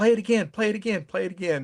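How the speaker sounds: high-pitched, urgent, put-on yelling. Retelling yelling at someone to play it again: imitating own yelling. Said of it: "I'm yelling at Charlie".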